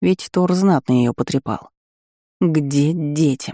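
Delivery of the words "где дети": threatening hiss, like a cat. A narrator reads the first-person speaker's question to Thor, hissing like a cat. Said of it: "зашипела я кошкой".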